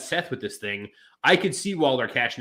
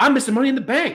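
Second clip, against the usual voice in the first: very high put-on Australian–New Zealand accent; 11 semitones higher, 6 dB louder than usual. Acting out what a guy would say the next week, in an australian–new zealand accent. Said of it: "That was a good accent".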